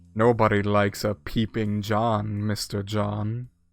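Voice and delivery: slow, sly, grinning, smiling delivery. Voicing a character who has just trapped a player against a wall: smiling, sly delivery. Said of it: "as he smiles and says".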